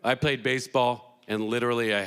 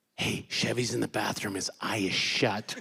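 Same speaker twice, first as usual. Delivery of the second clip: put-on whisper; 4 dB quieter than usual. Retelling a friend's early-morning phone call: imitating Vinny whispering. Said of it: "he's whispering".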